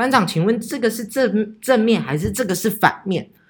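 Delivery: confused, stumbling tone. Speaker retelling own question to the squad leader, imitating a puzzled tone. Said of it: "我也是用很疑惑。的口气".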